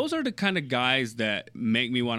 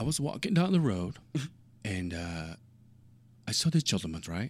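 poorly done, fake put-on English accent; 2 semitones lower than usual. Challenged by the other host to give an english accent: bad english accent. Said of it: "Give me your English accent".

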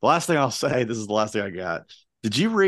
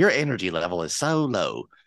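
put-on scolding voice, pitched lower; 3 semitones lower than usual. Imitating Colin's text messages that belittle the speaker: imitating Colin scolding. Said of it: "Is that what I sound like in my text messages?".

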